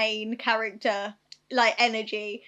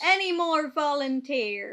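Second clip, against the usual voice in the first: put-on pirate captain voice, calling out; 4 semitones higher than usual. Quoting a line about volunteers from a scene: pirate voice. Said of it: "I don't know why I turned into a pirate".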